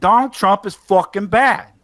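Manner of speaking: put-on loud, thick New York Italian accent. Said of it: "that thick Italian, like, New York thing".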